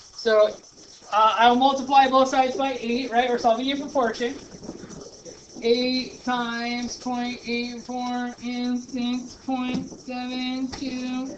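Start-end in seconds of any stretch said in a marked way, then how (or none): 5.6-11.4 very slow robotic voice. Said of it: "I calculate using the robot voice".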